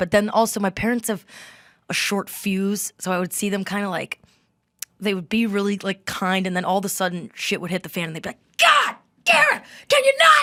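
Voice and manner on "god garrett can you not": exasperated screaming, very high and very loud. Recalling your short-fused parents suddenly losing it at you, imitating parents screaming. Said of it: "like just screaming".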